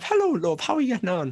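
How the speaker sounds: very high, put-on Irish mother accent. Talking about Irish ads, doing the stereotypical Irish mother voice. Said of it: "use that Irish mother".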